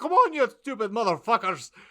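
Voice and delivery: put-on full Scottish accent, high-pitched and loud. Quoting a game character voiced by David Tennant: David Tennant full Scottish accent. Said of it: "full Scottish accent".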